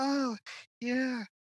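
very high, exaggerated, over-the-top moan. Imitating over-the-top porn performers on a routine: imitating over-the-top moaning.

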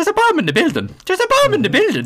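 exaggerated put-on Irish accent. Retelling pub locals doing their impression of an irish person: imitating a bad irish impression. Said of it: "That was their impression of an Irish person".

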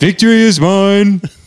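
high cartoon voice. Taking turns trying cartoon voices, Stewie impression. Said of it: "when I try to do Stewie".

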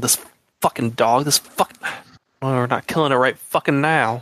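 quiet hushed tone. Voicing a stranger heard in a dark cavern: whispering NPC.

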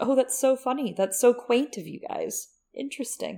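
giggling, tickled, high voice. Describing a woman who giggles all the time around corners, imitating her giggling. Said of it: "just like giggling all the time around corners".

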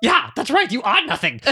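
very high, squeaky little queen voice. Acting out a made-up mole rat scene for a listener: voicing the queen mole rat. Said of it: "She's like".

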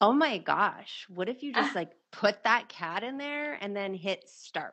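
put-on valley girl voice. Demonstrating a funny voice for a silly thought, valley girl voice. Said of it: "like a valley girl".

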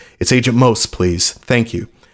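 ordinary talk, nothing marked

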